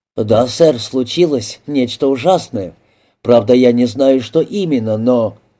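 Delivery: ordinary delivery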